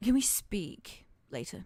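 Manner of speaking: very slow, private, confidential aside under the breath. Voicing a character who leans to another to ask: under his breath. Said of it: "very under his breath".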